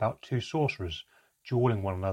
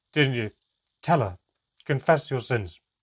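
loud, cutting, snapping delivery; 3 semitones higher, 7 dB louder than usual. Reading a fantasy story, a character rounds on the elf, snapping at someone. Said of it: "She snapped at the elf".

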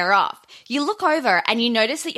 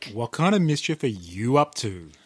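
acted creepy character voice, lower pitch; 12 semitones lower, 3 dB quieter than usual. Playing the role of the creep saying a cheesy line: creep role. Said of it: "play the role of the creep".

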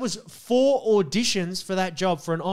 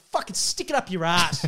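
mock-angry outburst, acted temper loss. Retelling what he said back then to thanks for the fans: retelling an angry outburst. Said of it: "I cracked it at the time".

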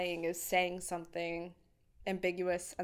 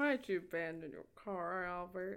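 upper lip held up, lips never touching; 5 dB quieter than usual. Imitating a line from an interrogation scene: imitating talking with lips never touching. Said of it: "he kept his lip up. His lips didn't touch".

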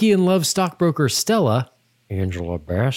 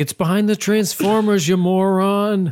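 put-on high berating, scolding tone, moron drawn out; 6 semitones higher than usual. In an acted-out store scene with a cashier, one character snaps, yelling. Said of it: "stop yelling".

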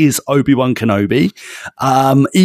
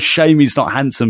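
ordinary delivery

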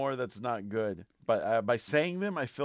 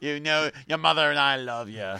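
well-done fake Irish accent; 4 dB louder than usual. Playing a parent peeking in to tell the kid goodnight, in an Irish accent. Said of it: "That was good Irish".

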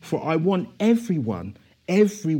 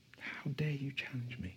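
play-acted, very hushed, very quiet, frightened voice; 3 semitones lower, 18 dB quieter than usual. A speaker retells Satan's words to him yesterday, imitating Satan's scared voice. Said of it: "And it was a scared voice".

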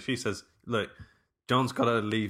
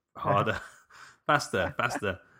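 put-on annoyed voice. Retelling a film character urging Italian workers on: imitating an annoyed boss. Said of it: "he just sounds like the worst boss in the world".

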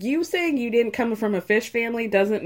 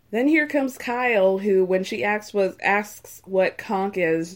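ordinary talk

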